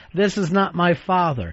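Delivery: plain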